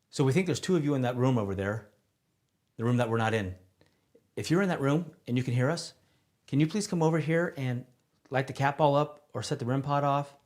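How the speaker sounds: breakneck speed, loud and high. Asking anyone in the other room to set off a device: talking really fast. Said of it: "I'm going to talk really fast".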